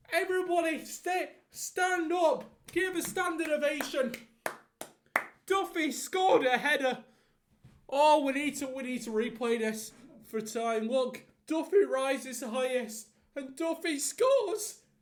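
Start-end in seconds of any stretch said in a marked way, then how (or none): 10.8-14.7 loud call with voice breaking and cracking. Commentating the replay of Duffy's header goal, voice cracking. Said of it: "and voice crack".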